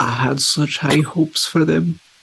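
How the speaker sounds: choked-up, fighting tears, barely holding together. Voicing Flip in a scene, holding back tears. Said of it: "Flip is like holding back tears".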